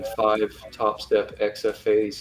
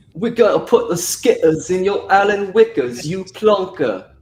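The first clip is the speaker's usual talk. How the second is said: fake British accent, higher and louder; 9 semitones higher, 6 dB louder than usual. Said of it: "Say it in British".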